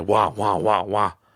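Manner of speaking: mock whining and crying. Showing what repeating your wants sounds like, mock whining and crying. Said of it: "It sounds like I'm just whining and crying".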